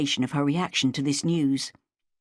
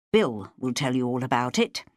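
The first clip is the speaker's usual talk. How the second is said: ordinary delivery, nothing marked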